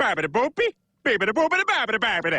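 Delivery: fake Italian-sounding gibberish. Pretending to speak Italian while ordering salami: fake Italian gibberish. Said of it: "Speaking Italian".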